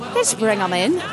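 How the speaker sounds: put-on Irish-accented speech, slurred. Asked to say the line again with an Irish accent, Irish accent. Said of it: "Now say it with an Irish accent".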